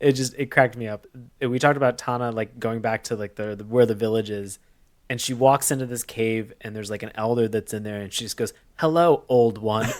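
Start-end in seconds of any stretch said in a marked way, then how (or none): 8.8-9.9 robotic, mechanical, machine-like delivery. Retelling how a character greeted an elder in a cave; robotic voice. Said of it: "it was said like a robot".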